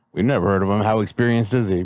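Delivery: normal talking voice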